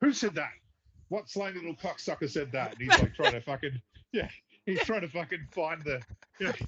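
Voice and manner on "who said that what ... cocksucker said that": put-on, demanding drill sergeant voice. Retelling a Full Metal Jacket scene as the drill sergeant: Sergeant Hartman impression. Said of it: "the drill sergeant ... Sergeant Hartman's walking around. he's like".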